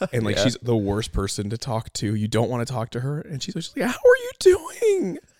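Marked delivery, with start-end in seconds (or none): 3.9-5.2 put-on very high, croaky, hoarse party-girl voice, slow drawl. Describing the girl at the party nobody wants to talk to, imitating a party girl's voice. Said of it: "that girl at the party whose voice is always like this".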